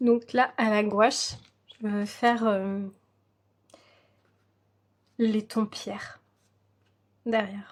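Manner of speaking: odd voice with trouble breathing, labored. Painting with gouache while having trouble breathing; slightly strange voice. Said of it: "j'ai certainement une voix un petit peu bizarre".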